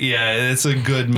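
ordinary delivery

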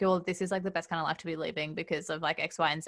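ordinary talk

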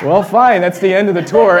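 mock begrudging, reluctant, unwilling tone. Retelling how the tour leader gave in over the ice cream, imitating a reluctant tour leader. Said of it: "she had to reluctantly kind of go like".

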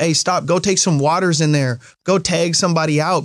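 normal talking voice

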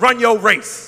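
very loud New York Brooklyn accent. Leading the audience in repeating a phrase: brooklyn accent. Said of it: "Say it like you're from Brooklyn".

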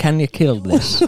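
loud, high, put-on Irish accent. Retelling a film scene, the speaker tries the line in an irish accent. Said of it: "do it Irish?".

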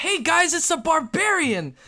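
shrill calling-out voice. Narrator voices a figure who spots the barbarian in the party: yelling out. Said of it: "the person who's looking at you yells out".

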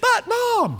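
very high-pitched voice, pitched way up. Retelling the story of Rebecca and her son Jacob, in a high-pitched Jacob voice. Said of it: "you had to have a high-pitched voice".

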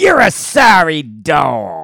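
very loud, slow, swooping sing-song character voice, dog stretched. Repeating a story line the way the character says it. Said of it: "Yes, just like that".

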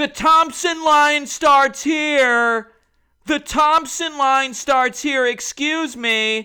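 very loud, very high, drawn-out yell. Retelling a crowded autograph line, imitating a man yelling. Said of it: "I hear some guy yelling".

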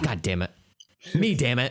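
caught-out, cornered swearing. Joking about a customer at a bread and fishes store: acting out Jesus swearing. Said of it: "And then Jesus is like".

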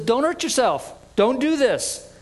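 loud calling voice. Retelling a man calling out to a jailer about to kill himself, calling out loudly. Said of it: "calls out in a loud voice and says".

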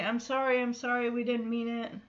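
put-on tearful crying voice. Retelling a scene where a character cries and apologizes: imitating crying while apologizing. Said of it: "Paula is crying and just saying".

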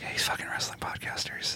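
whispered, scornful, contemptuous delivery.

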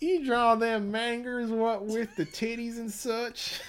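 very high, put-on nasally Midwestern twang. Riffing on a question about drawing manga, the speaker uses a high, nasally Midwestern twang. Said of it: "a high, nasally Midwestern twang".

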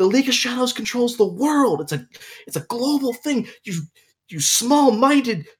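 mock very high, exasperated, indignant yelling. Recounting how they yelled at the tv while watching: retelling own yelling at tv. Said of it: "I was literally yelling at the TV".

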